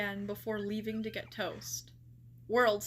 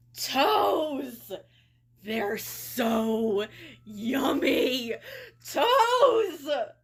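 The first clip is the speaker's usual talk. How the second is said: very slow, loud, demonic gremlin voice, drawn-out "so"; 3 semitones higher, 8 dB louder than usual. Reading a story aloud for viewers, Frumpy speaks: Frumpy's demonic gremlin voice. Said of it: "read this next part in full seriousness with a demonic gremlin voice".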